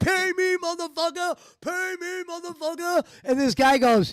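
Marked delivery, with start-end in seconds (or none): 0.0-3.0 put-on rowdy drunk voice, high, yelling. Retelling slamming a hand down at a poker game: imitating himself yelling drunk. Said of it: "I slammed the hand down".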